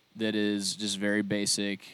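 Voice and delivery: plain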